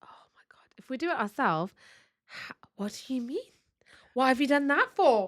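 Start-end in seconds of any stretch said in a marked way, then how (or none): 2.8-5.3 put-on huffy, affronted, indignant tone. Acting out the other person's reaction to chores done for them: imitating someone getting offended. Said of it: "Just good, just good performance".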